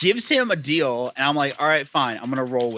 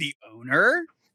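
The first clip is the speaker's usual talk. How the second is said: mock-condescending, put-on tone. Retelling a yelling match with a guy demanding the manager, retelling being condescending. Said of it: "I was being like condescending".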